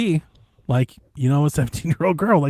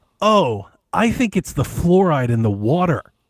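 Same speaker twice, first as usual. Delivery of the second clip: usual speaking voice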